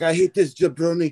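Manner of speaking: mock yelling. Retelling how a handler's client ranted about him: imitating someone yelling. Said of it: "he's just yelling about Eric Sims".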